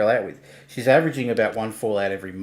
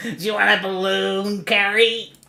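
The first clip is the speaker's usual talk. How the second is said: squeaky, very high put-on character voice; 11 semitones higher, 4 dB louder than usual. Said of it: "what I do to get into that voice".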